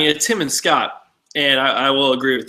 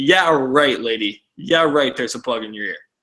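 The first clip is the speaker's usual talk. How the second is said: put-on mocking laughter while talking. Retelling a roommate's reaction while watching: imitating someone laughing while talking. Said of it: "he was just laughing like".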